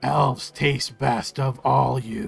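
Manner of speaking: slow, creaky reptilian voice, drawn out with a creak. Voicing a departing reptilian creature as he looks back: Usk voice. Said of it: "and he says".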